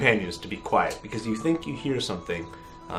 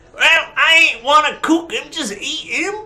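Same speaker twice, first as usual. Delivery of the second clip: put-on goblin voice, much higher and louder; 11 dB louder than usual. A game master voices a goblin arguing with an orc, in a goblin voice. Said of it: "The goblin says".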